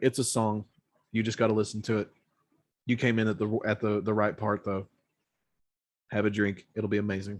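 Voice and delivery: ordinary talk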